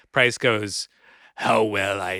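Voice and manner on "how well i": campy, deep put-on voice, lower. Retelling a talk-show reply in a Vincent Price voice. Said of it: "I can't do his voice".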